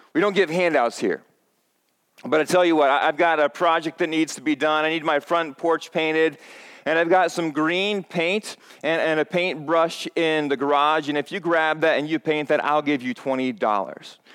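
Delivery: ordinary delivery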